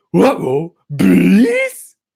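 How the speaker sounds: cartoon dog voice with swooping up-and-down pitch. Go all out on one specific word that starts to sound like a cartoon, in a Scooby-Doo voice. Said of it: "It sounds like Scooby Doo".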